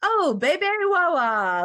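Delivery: weak put-on French accent, sing-song, "wawa" drawn out. Retelling what a husband said about the baby: imitating husband's French accent. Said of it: "in a better French accent than that".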